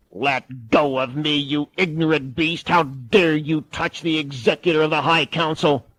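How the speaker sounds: otherworldly, eerie, possessed alien demon voice. Reading a restrained woman speaking to the guard in an alien voice. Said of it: "an alien voice said".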